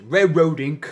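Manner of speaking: put-on British accent. Repeating the other speaker's pronunciation of a game name: imitating a British-sounding pronunciation. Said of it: "You're saying it like a British person".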